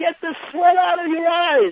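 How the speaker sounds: piercing high-pitched scream. Retelling a fan at a Yankee game yelling at the umpire: imitating a fan screaming. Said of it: "he would scream down".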